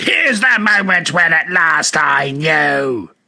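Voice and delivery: slow, frenzied, hateful shriek, final word stretched. Reading a story aloud, the voice continuing at Arthur: feverish pitch of hatred. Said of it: "reaching a feverish pitch of hatred".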